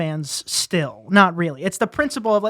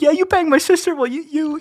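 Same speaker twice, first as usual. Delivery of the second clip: fake crying, much higher pitch; 8 semitones higher, 3 dB louder than usual. Mocking the comeback a friend suggests, acting it out: mock crying. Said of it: "It's like you're crying".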